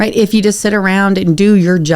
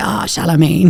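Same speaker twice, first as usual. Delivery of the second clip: tiny, affected, put-on little voice. Retelling a farewell in a skit, quoting him, his little voice. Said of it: "he said it the way he does his little voice, like".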